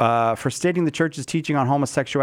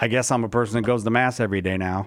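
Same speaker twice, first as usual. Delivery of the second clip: normal talking voice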